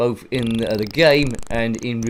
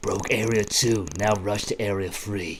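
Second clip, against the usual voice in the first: put-on, made-up husky voice; 2 semitones lower, 5 dB quieter than usual. Playing a game and saying the stage message together: put-on husky voice. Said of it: "speak with me in your husky voice".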